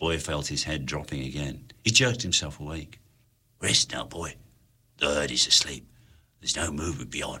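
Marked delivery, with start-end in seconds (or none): 3.6-7.4 soft, hushed half-whisper all the way through. Hunter speaks to Boy in the dark, half-whispered. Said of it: "whispered Hunter in the dark".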